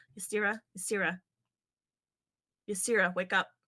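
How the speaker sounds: very urgent, insistent, pressing tone. A player's character shakes another character's shoulder to wake her, low and very urgent. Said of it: "kind of low and very urgent".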